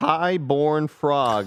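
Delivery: voice cracking. Reading out a viewer's name when the voice slips: voice cracking. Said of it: "What the hell did my voice do there?".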